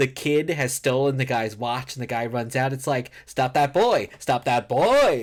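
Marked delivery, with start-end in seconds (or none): 3.2-5.2 big, loud, swooping movie-character inflection. Quoting a character chasing a kid who stole a watch: imitating a movie character's inflection. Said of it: "I just know the inflection of characters".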